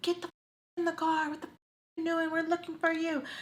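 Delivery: acted, high, fast, shrill, furious yelling. Retelling Tommy yelling at the speaker's mom, retelling angry yelling. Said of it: "Tommy's like yelling at my mom".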